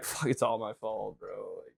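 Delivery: very soft, panicky muttering, acted out. Retelling own reaction after stripping the screw: imitating past self panicking. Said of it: "And I'd be like".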